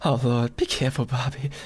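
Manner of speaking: acted trembling commentator voice. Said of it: "like with like a shaky voice".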